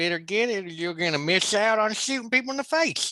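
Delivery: high-pitched Texas drawl with a lisp. Talking about Texas and rifles, in a Texas drawl with a lisp. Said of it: "Nothing like speaking with a lisp and a drawl".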